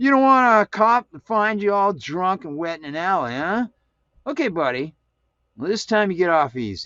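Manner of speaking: put-on drunk voice. A drunk man in an alley talks to the man lying there, drunk man talking. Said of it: "and in the rain-swept alley he smelled the sickening odor of alcohol and realized the man was drunk. / and in the rain-swept alley he smelled the sickening odor of alcohol and realized the man was dru".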